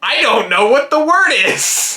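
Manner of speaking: very high, top-of-the-lungs acted yell. Retelling a game night when a friend blurted out the answer: imitating Jordan shouting at full volume. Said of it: "at the top of her lungs".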